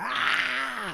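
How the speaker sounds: high, pained yell. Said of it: "He's yelling".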